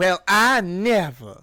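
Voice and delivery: put-on Southern US accent with drawled vowels. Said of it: "Would you rather if I said".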